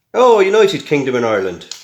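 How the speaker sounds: loud, bad, terrible put-on Irish accent. Reading names off a bit of paper, in a terrible Irish accent. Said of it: "he said in his terrible Irish accent there".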